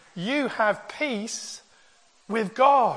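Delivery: very slow, deliberate, each word weighed. Pausing on a point for listeners, speaking very slowly. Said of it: "I'm going to say this slowly".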